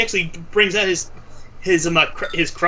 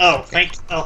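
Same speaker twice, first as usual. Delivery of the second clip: usual speaking voice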